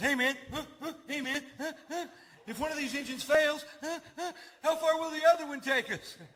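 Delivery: put-on frantic panic, very high, rattled off fast. Retelling what the panicking guy sitting next to him said, imitating a panicking passenger. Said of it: "is losing his mind".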